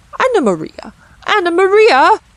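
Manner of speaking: shrill, squeaking rat voice, very high. Reading a children's story aloud, the rat cries out in a squeaking rat voice. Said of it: "squeaked the rat".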